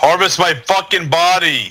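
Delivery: very loud, dragged-out, drawn-out bellow. Calling to teammates in a game while stuck: loud. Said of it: "You're so loud".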